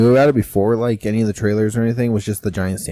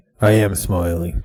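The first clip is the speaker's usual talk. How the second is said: put-on villain voice; 3 semitones lower than usual. Quoting the actor's line from the trailer: Thanos-like voice. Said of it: "He sounded so much like Thanos".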